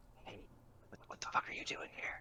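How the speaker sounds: hushed, breathy whisper under the breath. In a role-play, a tied-up character calls to someone nearby: whispering. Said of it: "I'm gonna whisper like".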